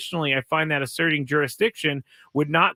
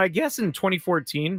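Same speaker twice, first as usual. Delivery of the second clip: voice cracks mid-word on fourteen; 3 semitones higher than usual. Speaker explaining a college sports ruling, voice cracking. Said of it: "my voice just cracked".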